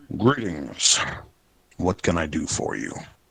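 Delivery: deep voice, swooping. A narrator voices a character who looks up at the approaching player, deep voice. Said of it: "with a deep voice says".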